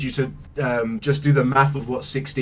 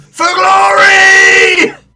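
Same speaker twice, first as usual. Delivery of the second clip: battle-cry shout, much higher and louder; 14 dB louder than usual. Mid-combat in a tabletop game, giving a character's battle cry. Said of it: "You Tobin shouts".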